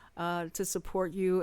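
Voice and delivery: plain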